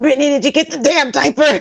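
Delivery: play-acted high-pitched yell, sounding in serious pain. Retelling getting in the car in pain: retelling own yell. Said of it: "I get in the car and I yell".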